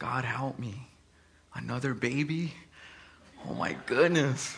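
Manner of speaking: tearful, crying, pleading voice. Retelling own past prayer to God for help: imitating own crying prayer. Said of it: "And just crying".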